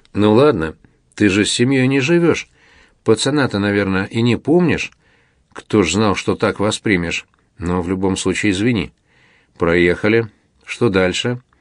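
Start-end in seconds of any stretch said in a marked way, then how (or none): none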